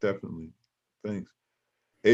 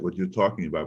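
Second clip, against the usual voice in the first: ordinary talk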